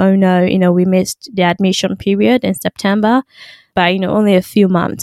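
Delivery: normal talking voice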